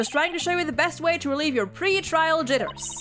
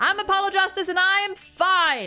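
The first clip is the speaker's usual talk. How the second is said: shouting loudly, louder and higher; 3 semitones higher, 5 dB louder than usual. Demonstrating the Chords of Steel voice workout before a trial, shouting. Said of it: "shouting, "I'm fine" in a really loud voice".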